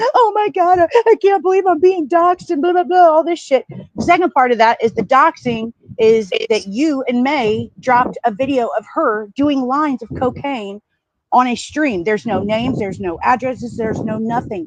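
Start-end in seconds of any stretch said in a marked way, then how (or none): 0.0-3.4 put-on high, weepy, tearful crying voice. Retelling what someone said on a panel: imitating Spooky crying. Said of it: "she's crying like".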